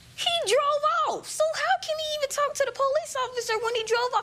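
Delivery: high, rushed, near-crying, upset voice.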